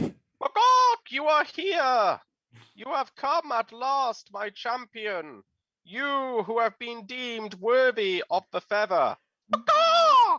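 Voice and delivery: very high, loud, chicken-like voice. Narrating a holy chicken hailing Mokan as its champion, chickeny voice. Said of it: "says in its most chickeny voice".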